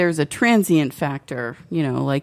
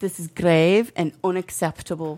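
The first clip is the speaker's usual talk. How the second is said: put-on English accent that comes out Scottish. Taking turns at accents with others, the speaker attempts an english accent. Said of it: "That sounded a little more Scottish than Irish".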